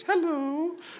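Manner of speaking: hello pitched way up high. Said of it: "But he has a very high-pitched voice".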